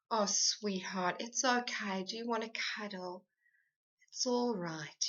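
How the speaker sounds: tender, empathic, soothing, gentle reassuring tone. Demonstrating how a parent should answer sadness, in a soothing, empathic tone. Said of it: "You want to use soothing, empathic tones".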